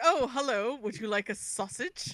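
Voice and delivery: put-on British accent, game-character voice. Retelling a game scene in which a character offers sausages: imitating a british game character. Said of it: "a British guy just being all like".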